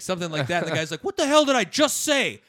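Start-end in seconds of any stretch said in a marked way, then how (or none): 1.0-2.3 very high, shrill, fired-up, amped-up angry outburst. Retelling the old man's reply to the comic's joke: imitating an amped-up angry man. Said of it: "getting all fucking, like, amped up".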